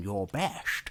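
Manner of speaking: put-on heavily laid-on Scottish accent. Quoting a film line, laying on a heavy Scottish accent: Sean Connery voice. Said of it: "really laying on the Scottish accent".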